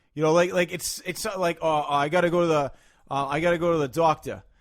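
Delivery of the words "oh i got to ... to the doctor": put-on casual chatter, Boston accent. Imitating how a boston accent comes out in speech: boston accent. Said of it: "that's Boston".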